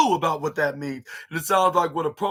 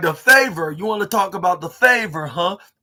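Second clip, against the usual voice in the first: loud, mocking, sarcastic taunting tone; 3 semitones higher, 5 dB louder than usual. Retelling a wrestler's taunt to Paul Heyman: imitating CM Punk's sarcastic questions. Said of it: "in the sarcastic questions".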